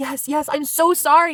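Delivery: mock sobbing, high and loud, tearful and pleading. Retelling a two a.m. confession while being held: imitating own past crying. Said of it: "And I would cry".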